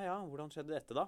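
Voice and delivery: condescending, patronizing, superior, talking-down tone. Retelling how a man questioned her about her cut finger, mimicking a condescending tone. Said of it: "Med veldig sånn nedlatende tone".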